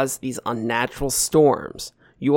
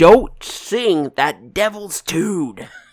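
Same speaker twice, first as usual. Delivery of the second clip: yelled loudly in a high pitch; 5 semitones higher, 4 dB louder than usual. Game narrator voices a character answering the players, as Skeleton Tom yelling back. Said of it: "Skeleton Tom yells back".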